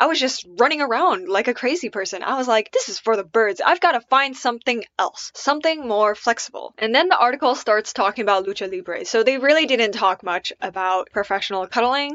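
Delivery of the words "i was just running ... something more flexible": ordinary talk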